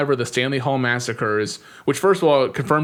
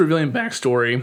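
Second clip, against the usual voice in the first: voice breaking, cracking mid-phrase. Starting to recap the next part of a film: voice cracking. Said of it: "my voice is cracked there".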